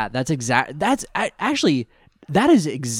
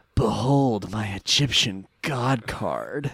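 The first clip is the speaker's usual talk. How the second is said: seductive caped-superhero voice; 3 semitones lower, 3 dB quieter than usual. Quoting Kaiba announcing his card: Kaiba's sexy Batman voice. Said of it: "in what can only be described as Kaiba's sexy Batman voice".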